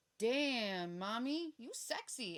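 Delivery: very slow, crude, rude delivery with drawn-out damn. Retelling what men say when they come over: imitating a rude catcall. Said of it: "You don't need to say it in such a rude way".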